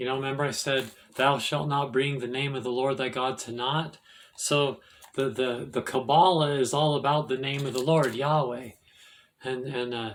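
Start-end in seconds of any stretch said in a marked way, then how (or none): none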